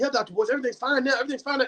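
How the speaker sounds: hurried, rattled-off, fast, reassuring patter. Retelling what a man told him, imitating someone talking fast. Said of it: "He was talking kinda fast".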